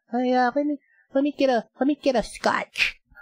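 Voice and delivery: super-high, squeaky, crazy voice. Retelling an actor ordering a drink in a bar: imitating a super high voice. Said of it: "high, like, you know, just crazy voice".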